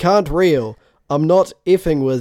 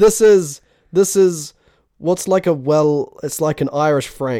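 normal talking voice

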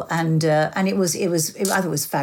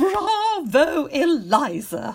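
full, very high stage character voice; 10 semitones higher than usual. Delivering the last line on the show: full Lady Bracknell voice. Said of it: "in her full Lady Bracknell voice".

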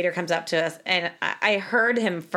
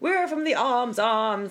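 put-on slow, high, teasing British accent, poking fun; 5 semitones higher than usual. Retelling joking around with a girlfriend while in England: mock British accent. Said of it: "trying to make fun of the British accent".

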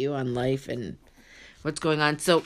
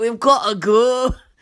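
higher-pitched, loud, mock Scottish accent. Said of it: "I'm like".

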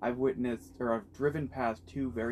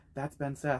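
soft, hushed, quiet aside. Retelling a friend pointing someone out: imitating a friend speaking quietly. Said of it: "he quietly goes".

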